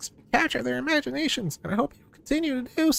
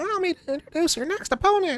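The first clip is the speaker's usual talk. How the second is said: little, high, squeaky voice; 4 semitones higher than usual. Voicing a game character introducing the next opponent: squeaky voice. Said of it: "doing the fucking squeaker voice".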